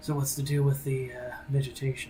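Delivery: hushed whisper. Mirage looks to a companion while leading the group over the road; Mirage whispering. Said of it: "kind of just whispers and says".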